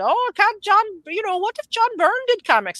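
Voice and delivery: very high, put-on Scottish accent. Imitating Mark Millar talking online about comics: Mark Millar impression, Scottish accent. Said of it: "I can do a Scottish accent".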